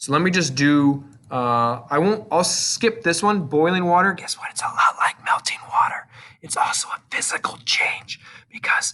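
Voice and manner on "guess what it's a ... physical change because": whispered, breathy voice. Teacher going through an example with the class before breakout rooms: whispering. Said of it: "I don't know why I'm whispering".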